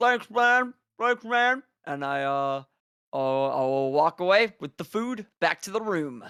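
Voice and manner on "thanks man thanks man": talking with mouth full, higher. Thanking a character in the game: mouth full of bread. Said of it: "with my mouth still full of bread".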